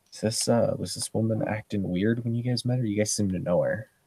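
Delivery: hushed, quiet half-whisper. Voicing a young Glasswalker who nudges Olivia with a question: half-whispering. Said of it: "just kinda whispers to her".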